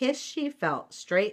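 ordinary delivery

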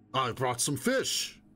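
forced, put-on, artificially hearty tone. A man who brought fish speaks to the woman, forced hearty tone. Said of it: "he said in an artificially hearty tone".

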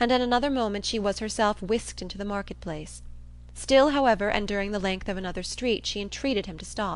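ordinary delivery

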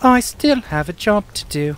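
slow, very computerized robot voice. Repeating a line someone just said, in a computerized voice. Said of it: "The very computerized voice".

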